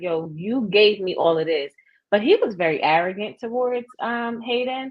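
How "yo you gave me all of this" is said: ordinary delivery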